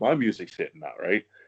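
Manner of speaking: plain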